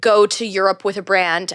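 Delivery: normal talking voice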